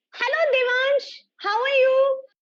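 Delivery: loud, piercing, shrill, very high voice. Starting a playful conversation game, the speaker greets the partner: loud shrill voice. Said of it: "continue a conversation in a loud and a shrill voice".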